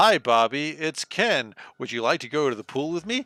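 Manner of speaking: crude low-fi computer-game speech, like bad digitized sample. Recalling a Commodore 64 Barbie game, imitating Ken's badly digitized voice. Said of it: "really badly digitized voice being like".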